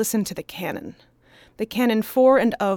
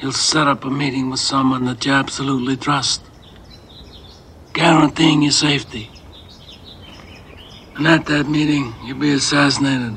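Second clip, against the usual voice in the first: muffled mumbling gangster voice, lower; 7 semitones lower than usual. Speaking in character as a gangster: Vito Corleone voice. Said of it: "You impersonate Vito Corleone".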